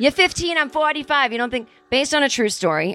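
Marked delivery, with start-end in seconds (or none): 0.0-1.7 put-on Midwestern American accent, pitched up. Repeating a line just heard, in his Midwestern accent. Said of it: "That's his Midwestern accent".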